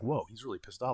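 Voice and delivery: mock shocked voice, acted surprise. Retelling how a very nice kid snapped, acting out own shocked reaction. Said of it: "that was like".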